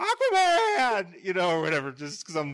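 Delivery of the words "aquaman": silly, high, loud, pitched-up goofy shout. Retelling walking into an exhibit and seeing aquaman stuff: imitating own excited shout. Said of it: "just being stupid".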